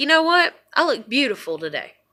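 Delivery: plain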